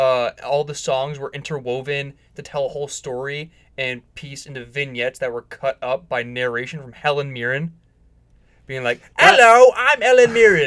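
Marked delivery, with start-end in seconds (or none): 9.2-10.7 put-on overdone Cockney accent, very high, shrill and loud. Describing a show's narration, imitating Helen Mirren in an overdone Cockney accent. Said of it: "you were way more Cockney than she is".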